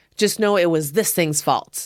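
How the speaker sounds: usual speaking voice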